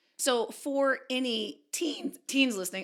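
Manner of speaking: voice cracking mid-phrase. Starting to address teens listening, voice cracking. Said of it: "oh, my voice is cracking".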